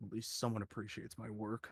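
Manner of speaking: very quiet, muttered whisper. After being called reliable, the character whispers to himself: Brandel whispering to himself. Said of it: "just kind of whispers to himself".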